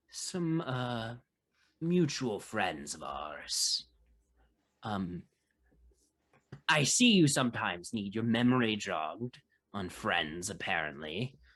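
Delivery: voice brought down low. After the others walk away, Botark speaks to Bowman: Botark's lowered voice. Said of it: "lowers his voice and says".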